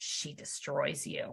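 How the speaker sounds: very quiet, hushed, breathy whisper. Retelling what another woman whispered to a child: imitating someone whispering. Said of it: "she looks at Chloe and whispers to her".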